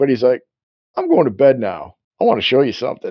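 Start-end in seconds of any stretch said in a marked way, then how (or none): 1.0-3.1 put-on Boston accent. Retelling what he said to Wilma, imitating a Boston accent. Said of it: "he's like basically a Boston accent".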